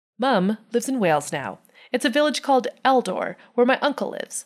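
ordinary talk

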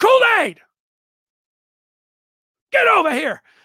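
very high-pitched, loud yelling. Retelling hearing Nick Saban yelling for a player: imitating Nick Saban yelling. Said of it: "Nick Saban yelling".

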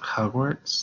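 hesitant, tentative, unsure, doubtful tone. Choosing a trivia category aloud: unsure, doubtful question. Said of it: "could everyone hear the confidence coming out of my voice?".

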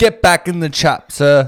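weird put-on British accent, very loud and high. Joking around with another speaker: weird British roleplay voice. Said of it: "Roleplay, uh, weird British".

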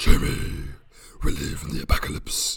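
put-on gravelly superhero voice. Opening a podcast attempting a Batman impression: bad Batman voice. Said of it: "that's like a demon voice. That's not Batman".

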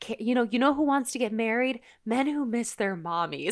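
put-on sarcasm, pointed and knowing. Retelling a brunch line from the episode: imitating Miranda's sarcasm. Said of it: "such a fantastic Miranda sarcasm line".

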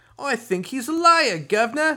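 very high, very loud, shrill put-on Cockney accent. Retelling handing over coins during a game, in a put-on cockney accent. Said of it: "I don't know why we do this Cockney accent".

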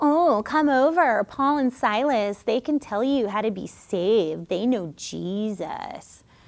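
soft, little demonic mocking taunt. Speaker retelling the voice that called after Paul and Silas day after day, imitating a demonic mocking voice. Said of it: "that little demonic mocking voice".

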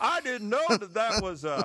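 bad put-on Southern accent. Quoting people who didn't realize it was a hoax, in an awful southern accent. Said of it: "go into the awful Southern accent".

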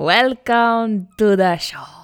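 put-on vampire voice. Repeating the other speaker's welcome to the show: Dracula voice. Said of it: "You sound like Dracula".

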